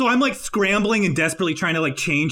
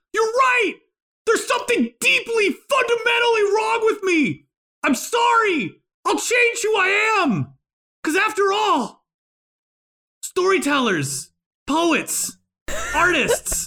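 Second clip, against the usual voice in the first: very high-pitched, angry, frustrated near-crying; 12 semitones higher than usual. Speaker acts out giving in to a laughing witch, crying from frustration and anger. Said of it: "I'm going to start crying out of frustration and anger".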